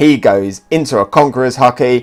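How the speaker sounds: usual speaking voice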